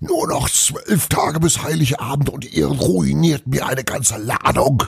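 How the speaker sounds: raging, furious bellow, very high. Narrator reading Santa Claus's line in a German story, bellowing. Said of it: "brüllte er weiter".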